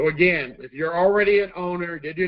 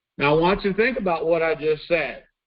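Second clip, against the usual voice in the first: normal talking voice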